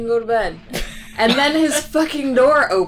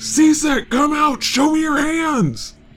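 acted loud, crazy booming yell, higher pitch; 4 semitones higher than usual. Telling a story, the speaker acts out another voice shouting at a man, retelling a loud, crazy boom. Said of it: "another loud, crazy voice booms".

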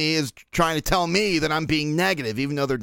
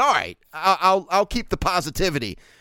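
plain

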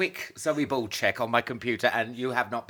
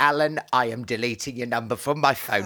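ordinary talk, nothing marked

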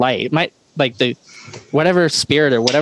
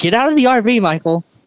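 high-pitched, carrying yell; 9 semitones higher than usual. Retelling hearing a woman yell during hide and seek, retelling her yelling. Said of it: "I hear her yelling".

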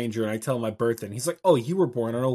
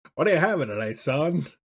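put-on vintage, old-timey forties-era way of talking; 3 semitones higher than usual. Imitating a man pouring drinks, in a 1940s accent. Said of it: "Does he have that 40s accent too?".

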